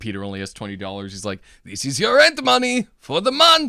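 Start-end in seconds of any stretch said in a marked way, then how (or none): 1.6-3.7 put-on shrill, loud, swooping, weird European accent. Speaker quoting Mr. Ditkovich taking rent money from Peter: weird European accent as Mr. Ditkovich. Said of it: "he's like weird European accent".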